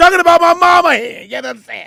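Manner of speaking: put-on joking Italian accent. Improvising a scene with co-hosts, joking italian accent. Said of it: "why'd you go Italian all of a sudden?".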